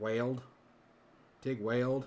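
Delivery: Texan drawl, weld stretched to wayld.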